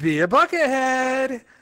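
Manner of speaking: chipper, cheery, upbeat store-clerk delivery. Told to say the Bucket Mart slogan in a cheery voice, speaker tries it. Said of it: "only in a cheery voice".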